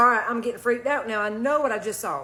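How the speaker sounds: ordinary talk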